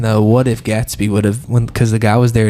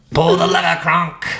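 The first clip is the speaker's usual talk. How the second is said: haughty cartoon villainess voice, pitched up; 7 semitones higher than usual. After being told they sound like Yzma, quoting her line in a Yzma voice. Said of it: "You sound like Yzma in The Emperor's New Groove".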